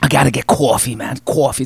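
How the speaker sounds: New Yorker speech with New York accent. Speaker told they sound like a New Yorker, imitating one, New York accent. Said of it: "You mean being like a New Yorker".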